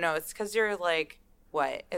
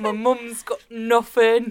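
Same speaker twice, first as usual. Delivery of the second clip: put-on Cockney British accent; 5 semitones higher, 11 dB louder than usual. Hosts riffing on a British boy character, repeating his line, Cockney accent. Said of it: "You're such a good British accent".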